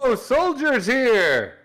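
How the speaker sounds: very high, shouted call-out. A player's character calls to the guards so they won't get suspicious: yelling out. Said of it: "I'm gonna yell out".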